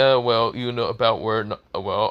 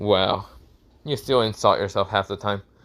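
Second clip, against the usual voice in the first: ordinary delivery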